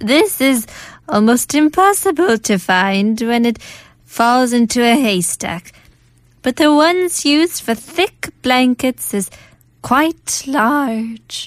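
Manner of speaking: put-on grandmother voice. Reading English translations of old Korean sayings aloud, in a grandmother's voice. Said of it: "We should do grandmother's voice".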